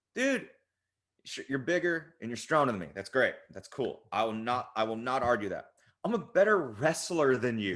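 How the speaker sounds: ordinary talk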